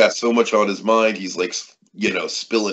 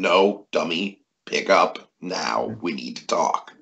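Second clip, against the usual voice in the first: menacing put-on mobster voice, pitched lower; 4 semitones lower, 3 dB quieter than usual. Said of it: "hide his menace".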